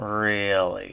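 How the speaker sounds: very condescending, patronizing, talking-down tone. Retelling a movie scene, imitating Rick's condescending tone. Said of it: "he does that very condescending".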